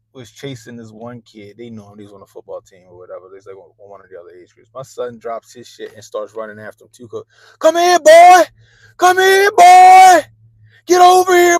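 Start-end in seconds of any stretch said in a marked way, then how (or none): 7.6-11.6 shrieked holler, very high, shrill, very loud. Retelling a son calling after a kid: imitating son sounding like a slave catcher. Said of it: "that shit sounded like he was a goddamn slave catcher".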